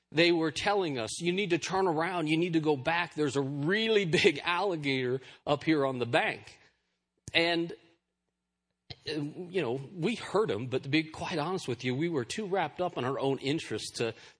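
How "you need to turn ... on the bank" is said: normal talking voice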